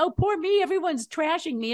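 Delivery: mock high, whiny, weepy sobbing voice. Act out the woman from the picket line complaining about being trashed, mock-crying. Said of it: "she's crying".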